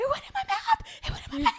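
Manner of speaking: put-on shrill, very high, rattled-off shrieking. Retelling a character's panicked line from a show: imitating a shriek. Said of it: "shrieking at the top of his lungs".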